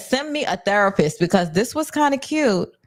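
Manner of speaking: ordinary delivery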